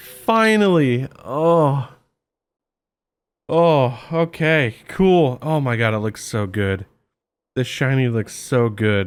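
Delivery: relieved, overjoyed and elated tone. A player finally gets the shiny after a long hunt, relieved and overjoyed. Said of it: "You can hear the relief in my voice".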